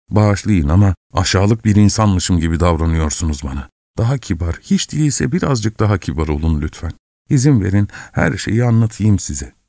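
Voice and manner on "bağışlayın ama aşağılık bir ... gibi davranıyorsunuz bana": plain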